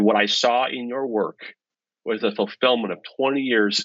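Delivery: ordinary talk, nothing marked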